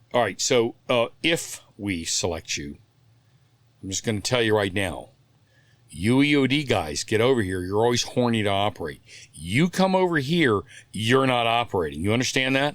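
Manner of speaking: imitated stern tone. Retelling a warning given when being selected: imitating someone speaking sternly. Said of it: "he's being very stern with me".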